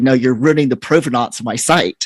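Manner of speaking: plain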